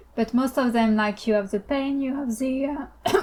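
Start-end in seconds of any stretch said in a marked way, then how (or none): 1.3-3.2 voice breaking and cracking mid-phrase. Speaker shares a view in conversation, voice cracking. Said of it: "sorry, my voice cracked".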